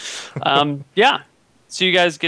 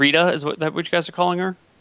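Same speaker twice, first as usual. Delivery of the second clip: usual speaking voice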